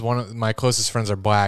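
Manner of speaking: usual speaking voice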